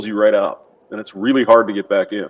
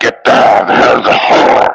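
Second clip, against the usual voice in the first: put-on raspy, rumbling old woman voice; 8 dB louder than usual. Showing how the stereotypical old lady smoker sounds: imitating old smoker lady's rumbling voice. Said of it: "that rumble in their voice".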